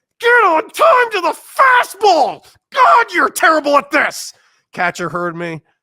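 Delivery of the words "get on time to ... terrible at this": very high, very loud, shrill angry yell. Retelling fouling off a first-pitch fastball: reenacting screaming at oneself. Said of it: "I literally screamed at myself".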